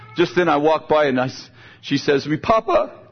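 ordinary talk

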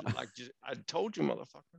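rough, creaky, rasping put-on voice. Retelling how the other looked back and replied: Denzel Washington impression. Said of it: "That's a pretty good Denzel impression".

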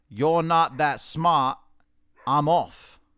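put-on loud, slow, drawn-out British accent. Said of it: "in a British accent said".

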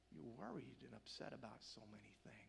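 mock, very soft, hushed, broken-hearted voice. Retelling Jesus speaking to Martha through tears: voicing Jesus with acted broken heart. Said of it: "but with a broken heart".

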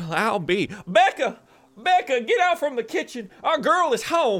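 loud cartoon voice, pitched very high. Voicing a father calling into the house: Foghorn Leghorn voice. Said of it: "It's your dead foghorn leghorn".

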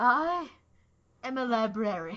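put-on loud, high, drunken voice. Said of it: "Rachel Weisz being drunk and going".

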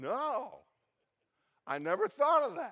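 slow, loud, put-on sloppy drunken slur. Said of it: "in his slurred speech".

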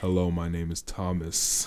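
scary, very deep, very low, slow voice. Imitating a friend whose voice the others call scary deep: imitating Thomas's deep voice. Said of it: "his voice is scary deep".

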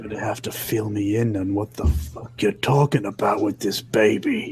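hushed voice. Voicing a character who asks a crewmate for answers: whispering. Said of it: "and just whispers".

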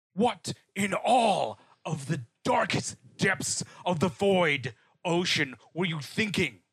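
furious, angry screaming rant. Voicing a character who storms over and grabs a patient: screaming in anger. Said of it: "he screams at her".

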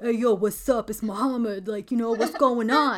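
loud, big dude-bro meathead voice. Describing a meathead on the phone, imitating Muhammad. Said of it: "So you're thinking, he's like".

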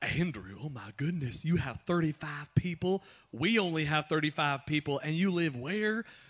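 imitated Texas accent. Retelling what the home worship pastor said: imitating a Texas accent. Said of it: "he has this Texas accent".

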